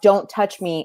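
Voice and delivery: ordinary talk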